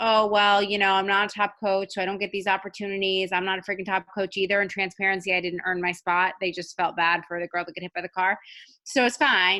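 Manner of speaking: ordinary delivery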